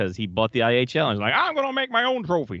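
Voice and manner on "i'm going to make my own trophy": squeaky tycoon voice, pitched very high. Joking about who bought the IHL, Ted Turner impression. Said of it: "Is that what he sounded like?".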